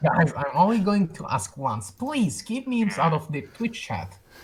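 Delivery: taunting, mocking put-on voice. Repeating the other speaker's request back at him, mocking voice. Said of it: "When you do that voice, who are you mocking".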